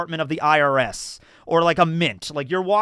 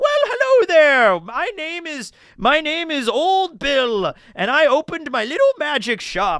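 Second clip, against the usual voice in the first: put-on very high, swooping, slow sing-song kindly old man voice; 11 semitones higher than usual. Playing a guy behind a magic shop counter greeting players: kindly old shopkeeper voice. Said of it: "a kindly old, you know, guy behind the counter and he's just like".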